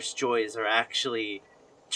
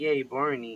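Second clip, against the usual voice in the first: put-on babyish, little kid's cheering yay. Retelling how kids act as babies: imitating a cheering baby. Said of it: "when we were babies and we were like".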